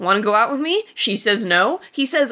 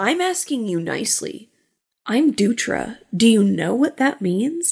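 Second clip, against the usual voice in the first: put-on creepy voice. Retelling a movie scene where a guy asks a girl to the dance: creepy Dutra voice. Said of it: "he's being very, very creepy".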